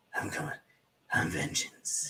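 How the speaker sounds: breathy, all-breath, whispered hero voice. Imitating how the voice sounds in the new movie: imitating Batman's voice. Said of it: "his voice is".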